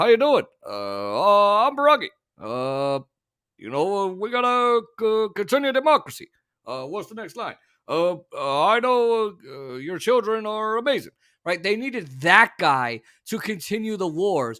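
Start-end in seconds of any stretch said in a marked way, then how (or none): 0.0-11.1 halting speech with long, drawn-out uhs. Mocking why a sweet-talking president was needed: Obama impression. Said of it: "talk like this".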